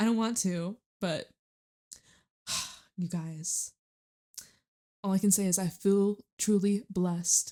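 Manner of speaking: emotional voice, holding back crying. Speaking to viewers and getting emotional: holding back tears. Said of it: "why am I getting emotional?".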